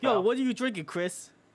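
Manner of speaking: very high put-on New Jersey Italian accent. Joking around with friends, asking what someone drinks: put-on New Jersey Italian accent. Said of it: "Are we staying in this accent the entire podcast?".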